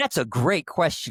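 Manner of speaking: high, gushing, overly agreeable, fake-cheery chatbot voice. Mocking how overly agreeable LLMs answer, doing their voice: mock-sycophantic AI voice. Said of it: "I'll do the voice like".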